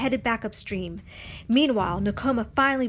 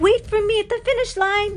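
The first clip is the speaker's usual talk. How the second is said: very high, ringing shouted yell; 10 semitones higher, 5 dB louder than usual. Narrator voicing Nakoma calling to Pocahontas during the canoe race, yelling. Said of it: "Nakoma yelled".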